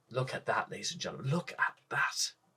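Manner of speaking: soft, hushed whisper under the breath. Pointing out a pool on an island to ladies and gentlemen: whispering. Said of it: "I don't know why I'm whispering".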